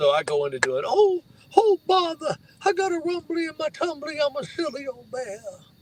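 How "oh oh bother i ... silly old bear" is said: silly, dopey cartoon bear voice, squeaky and very high. Retelling doing an impression when someone asked to hear it: Winnie the Pooh voice. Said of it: "I do a mean Winnie the Pooh".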